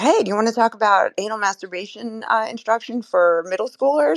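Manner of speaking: put-on nonchalant casual tone. Recalling walking up to strangers in Times Square, retelling a casual question. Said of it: "Like it was normal".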